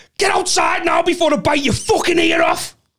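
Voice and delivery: very high screaming voice. Retelling how a bouncer grabbed a celebrating guy: imitating a scream. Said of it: "screamed at him".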